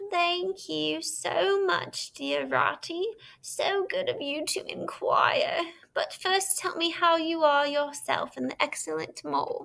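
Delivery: faint, frail, feeble, high, weak voice. Toad answers Ratty's cheerful greeting, in a feeble voice. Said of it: "A feeble vo- voice replied".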